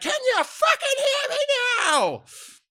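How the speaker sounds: very loud, very high, shrill swooping scream. Retelling running into the room during a phone call: retelling own yell. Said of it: "I've yelled out".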